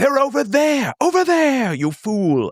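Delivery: loud, high-pitched wizard yelling. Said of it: "He's like".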